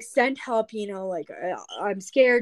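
normal talking voice

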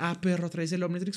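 high shouting. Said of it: "una invitación abierta a gritar".

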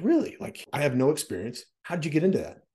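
high, eager, amazed and curious voice.

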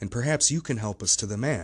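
ordinary delivery, nothing marked

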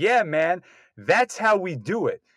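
very slow, put-on yelling call-out. Retelling a moviegoer's outburst in the theater: imitating someone yelling. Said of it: "the guy in the theater just yells out".

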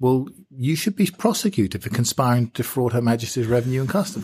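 half-joking, half-serious tone. Retelling what they said to a friend holding cash: semi-jokingly.

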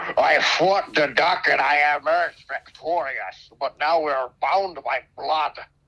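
rough, laid-on put-on Scottish accent. Joking with friends about slaying a duck, the speaker does a Sean Connery impression. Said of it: "That was my attempt at Sean Connery".

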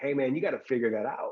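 firm, aggressive yet caring and loving push. Retelling what a stranger told him: imitating aggressive but loving tone. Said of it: "it was aggressive, but it came with love".

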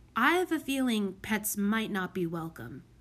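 ordinary talk

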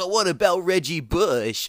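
very loud, drawn-out, obnoxious annoying fan voice. A usc fan mimics how people react on hearing it, in an annoying sports fan voice. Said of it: "that's my annoying sports fan voice".

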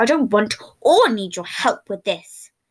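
nearly growled. Narrating a story, voice him refusing the other's help: nearly growled. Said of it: "he nearly growled it out".

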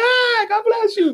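mock very high, drawn-out, exuberant joyful screaming. Describing a man greeting people at companies he visits, imitating someone screaming. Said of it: "he's screaming at him, like".

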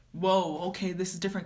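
normal talking voice

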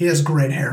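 ordinary delivery

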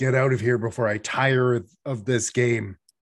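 loud, snarling, threatening dragon voice. Narrator voicing Sparkrender as his turn comes up in the fight, snarling. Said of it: "he snarls".

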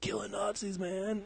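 put-on California stoner voice. Mocking an actor's bad accent in a movie, in a california stoner voice. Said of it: "That was like California stoner".

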